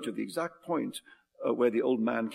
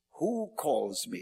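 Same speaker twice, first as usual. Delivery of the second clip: crow-like cawing, cackling voice; 3 semitones higher than usual. A narrator voices an old man challenged to a riddle battle: cawing, cackling voice. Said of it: "he said in a cawing cackle of a voice".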